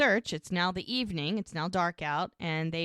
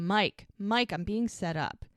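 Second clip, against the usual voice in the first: ordinary talk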